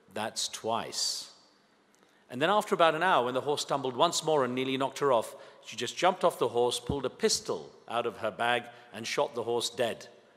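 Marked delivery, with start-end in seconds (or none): 0.1-1.2 soft, hushed whisper. Telling a joke, the wife whispers to the horse: retelling a whisper. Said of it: "She leaned forward and whispered".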